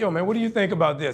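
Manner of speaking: ordinary delivery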